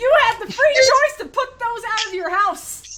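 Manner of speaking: high, loud angry yell.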